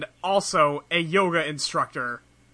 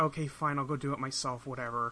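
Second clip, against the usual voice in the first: put-on dejected voice, quieter; 3 semitones lower, 10 dB quieter than usual. Retelling a cartoon scene, imitating dejected Sam. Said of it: "super dejected, and she's like".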